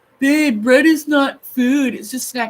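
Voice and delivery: high put-on Scottish accent. Quoting John, who just talks like that: imitating John's Scottish accent. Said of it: "I think he's Scottish or something".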